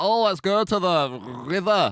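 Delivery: very slow Scottish accent. Discussing kinds of scottish accent, the speaker tries one without rolling the r's. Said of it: "I think I'd have quite a good Scottish accent".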